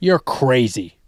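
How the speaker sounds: brash character voice. Joking back during playful banter with another speaker: Kramer voice. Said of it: "That's my Kramer impression".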